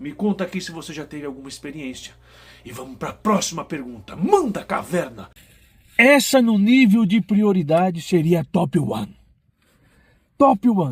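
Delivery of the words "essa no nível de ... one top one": put-on slow, elderly old man voice. Answering a viewer question while imitating Caverna: old man voice. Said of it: "tô tentando imitar o Caverna e tô falando com a voz de velho".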